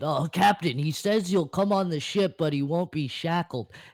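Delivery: high, yelled, in-character call. Voicing a henchman calling up to his captain: yelling in character. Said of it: "and he yells out".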